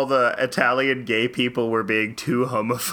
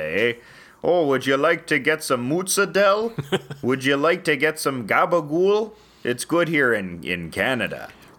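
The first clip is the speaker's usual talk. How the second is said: Canadian accent with Italian sound. Speaker showing how Italians in Canada sound: Italian-Canadian accent. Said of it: "This is how Italians sound in Canada".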